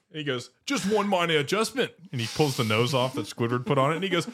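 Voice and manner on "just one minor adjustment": put-on, high-pitched Australian accent. Retelling a scene, quoting what he says: imitating an Australian accent. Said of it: "Why is he Australian?".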